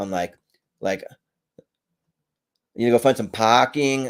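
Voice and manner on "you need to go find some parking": amateur, rough put-on Boston accent. Hesitant to try but doing a rough Boston accent attempt. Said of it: "attempt to do a Boston accent".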